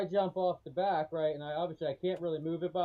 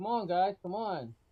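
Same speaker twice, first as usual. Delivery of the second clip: ordinary talk, nothing marked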